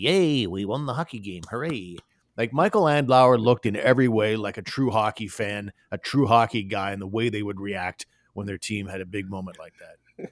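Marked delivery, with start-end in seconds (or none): 0.0-2.0 put-on stiff, stuffy, hollow, swooping sing-song cheer. Mocking how stiff owners cheer in the press box: mocking stiff team owner voice. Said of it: "You sounded like the mayor there singing in Wizard of Oz".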